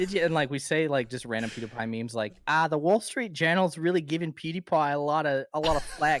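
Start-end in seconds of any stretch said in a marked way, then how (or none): 2.5-6.2 put-on Australian accent, higher. Showing how they impersonate a friend, an imitation of the friend with an Australian accent. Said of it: "just only doing that voice".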